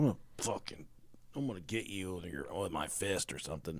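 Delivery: stone-cold, dead serious delivery. Retelling what the wife says to him: imitating someone stone cold serious. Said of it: "she'll just act stone cold serious".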